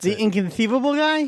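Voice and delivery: high-pitched lisping voice. Naming the actor by his famous line: Wallace Shawn voice with a lisp. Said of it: "Was that a lisp that you just put into that?".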